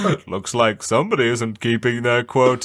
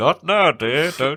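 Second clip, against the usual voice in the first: put-on grinning speech through gritted, clenched teeth; 3 semitones higher than usual. Acting out him hushing Missus Claus on television, imitating talk through gritted teeth. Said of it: "he's like through his teeth".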